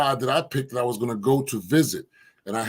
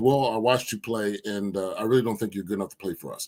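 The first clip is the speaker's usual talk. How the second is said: put-on serious voice, much lower and quieter; 3 semitones lower, 3 dB quieter than usual. Recounting a phone call with a coach, quoting the coach in a serious voice. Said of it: "he serious voice".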